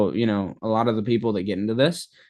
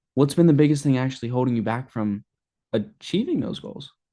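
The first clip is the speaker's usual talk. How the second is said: genuinely curious, interested, inquisitive tone; 3 semitones higher than usual. Example question asked with a curious tonality, in a curious tone. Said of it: "be curious, have a tonality".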